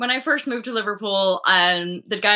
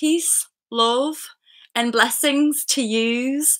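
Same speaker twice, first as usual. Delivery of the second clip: put-on Scouse Liverpool accent; 4 semitones higher than usual. Telling a story about living in Liverpool, quoting Daniel in a Scouse accent. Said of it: "I'm going to get embarrassed doing the accent".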